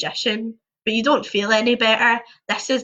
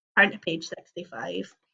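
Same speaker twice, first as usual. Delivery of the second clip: usual speaking voice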